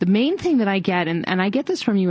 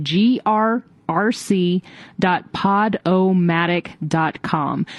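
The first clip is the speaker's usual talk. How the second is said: very slow, deliberate, spelled-out delivery. Radio host repeating a podcast web address, said slowly. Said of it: "I'm going to say it slowly this time".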